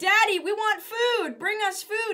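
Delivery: put-on shrill, very high, loud children's voices. Retelling how the teacher's children came on camera: imitating the children demanding food. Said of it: "J R and Zane would come on camera and they're like".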